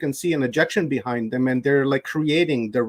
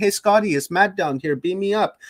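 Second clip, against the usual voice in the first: mock screaming, higher; 5 semitones higher than usual. Imagining calling up from earth to be beamed away: imagined screaming up. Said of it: "you'd be screaming back up saying".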